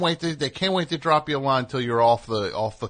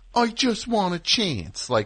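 very slow, drawn-out, high Philadelphia accent; 8 semitones higher than usual. Complaining that Rocky should sound like he's from Philly, doing Rocky in a Philly accent. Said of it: "he used to sound like Philly Boy Roy".

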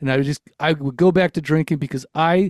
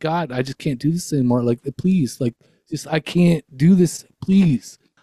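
acted-out, reenacted crying out. Speaker retelling how they cried out to God, retelling crying out. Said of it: "And then I cried out".

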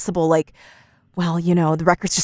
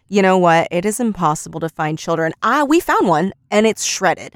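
usual speaking voice

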